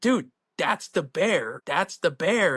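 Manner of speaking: mock excited yelling. Retelling how a buddy yelled at the bear in the garage, retelling a yell. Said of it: "And he's like yelling at it".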